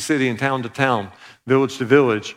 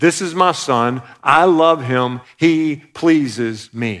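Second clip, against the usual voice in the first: mock proclaiming, declaring voice, as if from above. Quoting the Father's words from heaven at a baptism, in a loud voice. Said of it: "in a loud voice".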